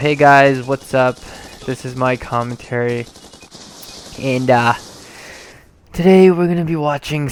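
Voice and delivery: dull, boring, flat monotone with no oomph. A commentator showing how not to open a video: boring flat monotone. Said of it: "if I talk like this ... that's kind of boring".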